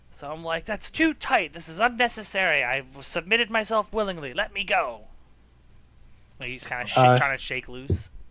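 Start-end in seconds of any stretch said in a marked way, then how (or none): 0.7-5.1 indignant, protesting shout with raised voice. Playing a character held tightly by another, yelling at him. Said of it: "I'm yelling at him that it's unnecessary".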